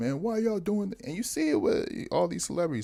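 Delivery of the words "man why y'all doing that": high, weepy, tearful adult whining. Mocking an adult complaining on national TV: imitating an adult crying. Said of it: "you crying on national T V talking about".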